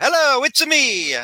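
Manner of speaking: very high-pitched, playful character voice. Retelling how mom answers calls: Mario voice. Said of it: "Like she's Mario".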